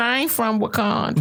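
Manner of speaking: ordinary delivery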